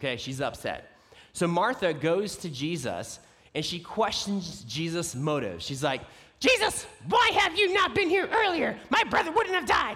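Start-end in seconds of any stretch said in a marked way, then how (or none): 6.4-10.0 fake very high, loud, scolding yell. Acting out Martha's upset words in a Bible story, Martha as fake yelling mom. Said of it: "my fake mom yelling at your kid voice".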